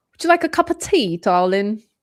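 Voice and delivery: best-effort, put-on British accent. Trying out accents for the others, offering tea in a british accent. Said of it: "That's my closest".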